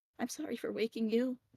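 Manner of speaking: small, quiet, mousy little voice. Voicing Clover to someone just woken up, in a quieter, mousy voice. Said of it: "like kind of mousy voice".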